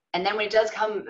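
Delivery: ordinary delivery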